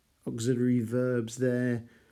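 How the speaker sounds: ordinary delivery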